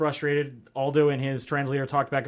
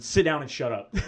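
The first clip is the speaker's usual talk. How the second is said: normal talking voice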